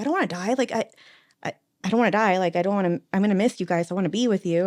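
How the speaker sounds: mock frantic, panicked, stammering voice. Retelling what he said during a full panic attack: imitating someone panicking. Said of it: "he had a full panic attack in that moment".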